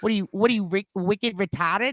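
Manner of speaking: put-on Boston accent. In a group joking about accents, the speaker does a Boston accent. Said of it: "Like I can do Boston".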